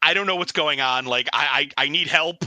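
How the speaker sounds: mock panicked, freaking-out voice. Acting out a character freaking out and asking for help: acting out freaking out. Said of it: "He's just gonna totally be spazzed out".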